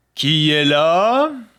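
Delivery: large wolf character voice. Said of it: "la grosse voix du loup".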